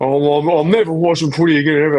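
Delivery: derisive, scornful mocking send-up voice. Joking about quitting football, imitating Wayne Carey. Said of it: "And then he's at the next game live".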